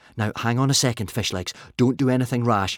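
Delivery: plain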